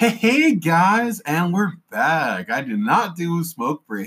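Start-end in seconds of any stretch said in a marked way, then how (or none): 0.0-2.5 put-on high, slow neighborhood-kid calling voice. Co-host announcing they're back after a break, sounding like a neighborhood kid. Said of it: "you sound like the neighborhood kid".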